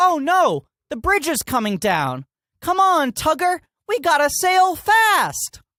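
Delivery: very high, loud, friendly, over-enunciated cartoon tugboat voice. Speaker compares an actor's delivery to talking vehicles on kids' shows, enunciated kids'-show vehicle voice. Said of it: "talking vehicles on kids shows have to like enunciate everything".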